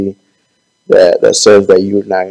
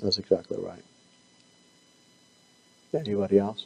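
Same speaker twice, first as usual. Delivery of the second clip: soft, strained voice fading out. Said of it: "I'm not whispering. I'm, I'm losing my voice".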